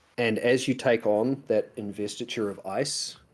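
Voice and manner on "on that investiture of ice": normal talking voice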